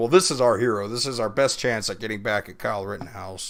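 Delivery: ordinary delivery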